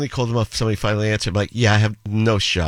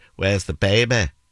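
northern English Manchester accent, plain delivery. Speaker demonstrates how the same phrase sounds in Manchester; Manchester accent. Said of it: "in Manchester, you'd say".

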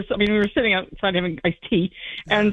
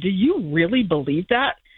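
put-on very earnest tone, slower; 2 semitones lower than usual. Retelling a question put to a woman, re-enacting asking it very earnestly. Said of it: "I said very earnestly".

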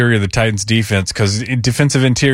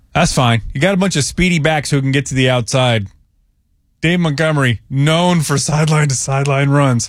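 dry, mocking, ironic, sarcastic tone; 4 semitones higher than usual. Talking through the opponent's running backs with a co-host: sarcastic. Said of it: "Yes, I'm being sarcastic".

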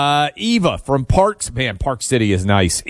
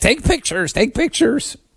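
very high-pitched, insistent, nagging voice; 10 semitones higher than usual. Imitating the producer who keeps urging pictures: imitating Producer Allie. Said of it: "my, uh, impression of Producer Allie".

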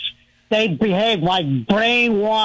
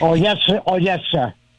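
smart-aleck, sarcastic fake-obedient tone; 3 semitones lower than usual. Answering after being told to lower the voice: smart-aleck reply. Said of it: "don't be a smart aleck".

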